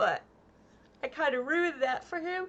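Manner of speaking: speaking through a yawn. Wrapping up before signing off, yawning while talking. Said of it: "sorry, I'm yawning".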